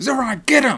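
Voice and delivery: spirited, high-pitched, eager peppy call. Recounting a funny game moment to a co-host, imitating spirited Fried Oak. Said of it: "because she was so spirited".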